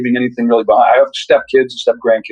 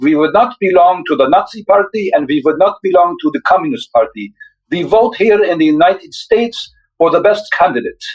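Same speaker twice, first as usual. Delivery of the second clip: bad fake Hungarian accent, pitched up; 6 semitones higher than usual. Quoting their mom, bad hungarian accent. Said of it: "my bad Hungarian accent".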